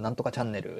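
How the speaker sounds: normal talking voice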